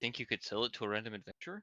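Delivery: soft, hushed in-character half-whisper. Asking Garg in character whether he could sell it to an adventurer: half-whispering. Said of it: "As I'll whisper".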